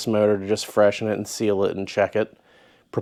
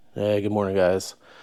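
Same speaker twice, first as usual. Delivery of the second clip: drowsy, half-awake sleepy voice. Greeting viewers early in the morning, half awake. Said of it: "if I sound like I'm half awake".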